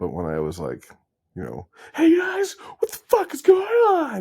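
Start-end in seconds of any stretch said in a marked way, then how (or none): 1.9-4.2 shrill, over-the-top, high, stretched screaming yell. Speaker demonstrating how they had to act out the greeting, screaming. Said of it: "I had to scream out this acting".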